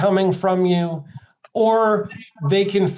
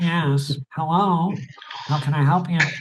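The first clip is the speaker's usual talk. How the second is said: put-on nasal receptionist phone voice; 3 semitones lower than usual. Imitating how receptionists answer the phone: imitating a nasal receptionist. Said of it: "Why do they always sound like they're so nasal?".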